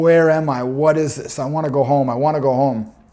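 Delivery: put-on frightened, pleading voice. Recounting a frightening experience, repeating what they kept saying then: retelling scared pleading. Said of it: "I was so scared".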